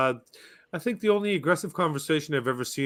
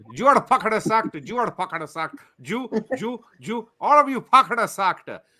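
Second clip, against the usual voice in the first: put-on Indian accent, loud and high; 6 semitones higher, 5 dB louder than usual. Joking about making a firing video, the speaker delivers it in an Indian accent. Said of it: "with an Indian accent".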